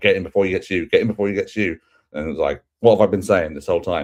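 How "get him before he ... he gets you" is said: raised, high-pitched shout. Recapping a Dynamite episode, quoting Moxley shouting at him, retelling Moxley's shout. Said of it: "Moxley shouting at him like".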